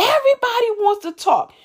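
mock very high, furious angry shout. Quoting a woman who shouted at you when you encouraged her, retelling someone shouting. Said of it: "you literally shouts at me".

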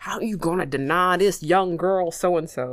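put-on elderly Southern gentleman accent. Retelling how Justice answered a refusal, old southern man voice. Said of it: "talking like an old southern man".

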